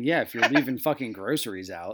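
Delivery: mock delivery. Retelling to the listener how they mocked them earlier: retelling a mocking remark. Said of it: "I was mocking you and saying".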